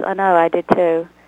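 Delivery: put-on plain reading in a British accent. Asked to do a British voice, voicing the character Penelope, British accent. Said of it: "Do some British voice for us".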